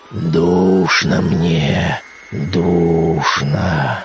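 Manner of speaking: very low, wild, inhuman, unearthly groaning moan. A dead man risen from his grave cries out in a wild inhuman moan. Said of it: "простонал он диким, нечеловечьим голосом".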